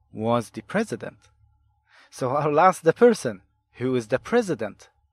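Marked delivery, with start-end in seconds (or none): none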